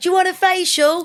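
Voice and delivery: high, loud, pushy door-to-door saleswoman voice.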